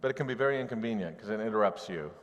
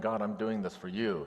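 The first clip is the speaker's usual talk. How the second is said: acted angry, accusing tone. Explaining the prophet Jeremiah's distress, acting out angry accusation. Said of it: "He is angry".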